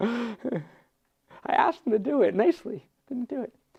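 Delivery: laughing through the words. Explaining a text about temple sites and trusted advisors, amused, laughing.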